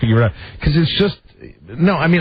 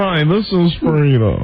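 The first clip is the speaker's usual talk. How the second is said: put-on radio announcer voice. Agreeing about how she answers the phone: imitating Frida's radio voice. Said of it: "That's what I was gonna say".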